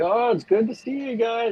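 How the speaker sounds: bright, cheerful, very high-pitched shout. A player's character walks away from a group, yelling cheerfully. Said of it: "can I be like yelling like".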